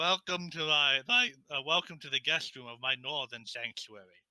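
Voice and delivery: put-on monster voice. Voicing a beholder welcoming visitors into its sanctuary: Xanathar the beholder voice. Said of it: "The beholder floats into the room and says".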